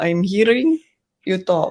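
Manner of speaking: mock, put-on Russian accent. Boasting of a good russian accent, the speaker shows off a put-on russian accent. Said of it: "I have good Russian accent".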